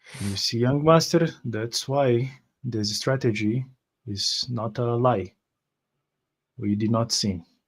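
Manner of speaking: voice kept down very low. Walking and holding the bells still, addressing the young master, in a very low voice. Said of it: "in a very low voice".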